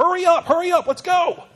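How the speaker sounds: loud, urgent high-pitched yelling.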